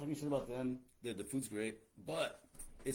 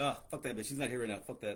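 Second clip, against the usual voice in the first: put-on contemptuous, scornful, offhand, dismissive brush-off tone. Retelling how an employee talked about her absent manager: imitating a coworker's dismissive tone. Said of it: "It's like".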